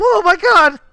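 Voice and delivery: very high, very loud, shrill terrified near-shriek. Narrating a scene, voice a pale bandit who looks at you: near-shriek of pure fear. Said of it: "the man almost shrieks like looking at you".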